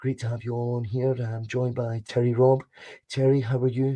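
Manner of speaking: toned-down voice. Asked to lower his voice, he tones it down for a podcast-style intro, toned-down voice. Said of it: "I'll tone it down. We'll talk like".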